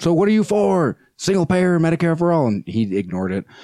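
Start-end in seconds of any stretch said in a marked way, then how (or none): 0.0-2.5 play-acted, high-pitched, called-out shout. Retelling a question yelled out at a speaker: retelling own yell. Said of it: "So I yelled out".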